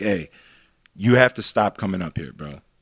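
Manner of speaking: acted anger without yelling. Retelling confronting a kid at the dj booth, the speaker acts out quiet anger. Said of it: "I'm mad where I'm not yelling, but I'm mad where like you know that I'm mad".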